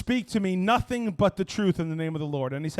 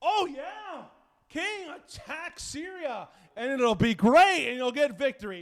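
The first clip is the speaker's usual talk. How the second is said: absurd, mocking, ridiculous, pitched-up sarcastic voice; 7 semitones higher than usual. Speaker retelling a Bible scene the way an actor plays it, in a ridiculous mock-sarcastic Micaiah voice. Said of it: "he gives this ridiculous sarcastic voice".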